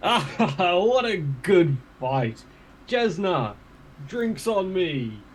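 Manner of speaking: high, slow, hearty, jolly laughing voice. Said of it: "heartily laugh and call out".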